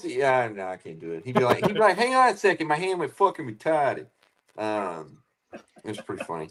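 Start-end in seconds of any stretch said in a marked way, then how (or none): 2.0-4.1 half-managed, put-on East Coast accent. Imitating a coworker from Boston: East Coast accent. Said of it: "East Coast".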